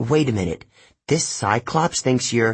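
plain

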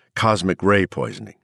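ordinary delivery

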